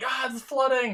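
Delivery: very high-pitched yell. Retelling being woken by mom: imitating mom yelling. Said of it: "I hear my mom in the hallway outside my room yelling".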